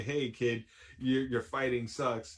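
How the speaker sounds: ordinary talk, nothing marked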